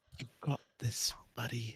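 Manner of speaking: slow, hushed, very quiet whisper. Encouraging a player picking a lock for bardic inspiration: whispering. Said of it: "You have to whisper it while he's doing it".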